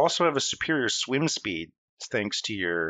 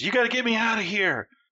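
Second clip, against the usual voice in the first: put-on very high, slurred drunken scream; 10 semitones higher than usual. Game master voicing a caged prisoner who screams at the players: drunken slurred scream. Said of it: "One of them screams".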